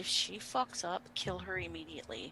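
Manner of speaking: very quiet, hushed whisper under the breath. Speaking in character, giving a quiet order to a companion: whispering in character. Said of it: "and I whisper to Einar".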